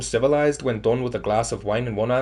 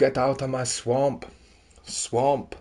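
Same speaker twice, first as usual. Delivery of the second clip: put-on Scottish accent, slow and drawn out. Working out how to do Scottish by imitating Shrek: Shrek voice. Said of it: "We gotta go like Shrek".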